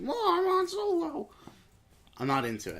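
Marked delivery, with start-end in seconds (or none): 0.0-1.3 put-on very high, drawn-out voice of a ten-year-old. Mocking how an actor sounds as Han: mocking ten-year-old kid voice. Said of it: "sounds like a ten-year-old kid going like".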